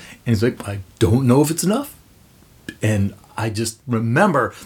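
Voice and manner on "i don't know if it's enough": plain, straightforward conversational delivery. Retelling a climate talk at a packed theater: Bill McKibben impression. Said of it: "That's a good Bill McKibben".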